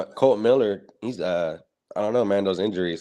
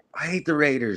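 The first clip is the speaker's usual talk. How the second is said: put-on high, tearful, sobbing crying kid's wail; 7 semitones higher than usual. Retelling a viral clip of a kid crying: imitating a crying kid. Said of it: "and he's crying hella bad".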